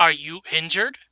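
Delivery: stock dwarf character voice. Narrating a creature that lands nearby and speaks, dwarf voice. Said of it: "in the same dwarf voice that you've been hearing this entire time".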